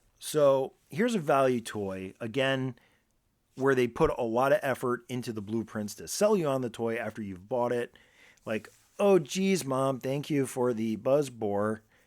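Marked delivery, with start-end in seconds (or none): 9.0-11.8 forced, put-on, sarcastically grateful tone. Acting out a kid thanking a parent for a toy: put-on sarcastic thanks. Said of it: "in your sarcastic slash".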